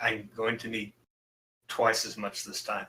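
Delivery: nervous and very quiet. In a tabletop game, a man negotiates an arrangement, a little nervous and very quiet. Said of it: "little bit nervous, and he just kind of very quietly says, / and he has a nice little red scarf with RS emblazoned in gold on it. Fancy. I like it. Okay. So for those of you who listened to the last e".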